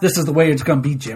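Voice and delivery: low, quiet mutter. Retelling Creed talking to Jim in a hallway, imitating Creed angry through his teeth. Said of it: "He's talking low and like angrily".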